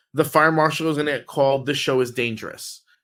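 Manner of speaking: usual speaking voice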